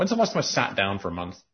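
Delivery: ordinary delivery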